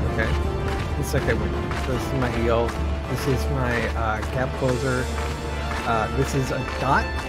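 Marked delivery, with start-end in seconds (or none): none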